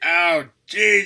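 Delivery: very high, loud, acted-out whining. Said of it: "when he's whining and complaining like that".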